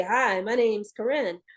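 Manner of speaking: normal speaking voice in chest register. Demonstrating the register you speak in, using chest voice. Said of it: "your chest voice".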